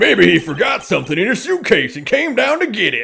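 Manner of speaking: animated, high, wide-swooping cartoon hero voice. Discussing the dub, the speaker reads a made-up line in Mister Satan voice. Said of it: "I'm reading in Mister Satan's voice now".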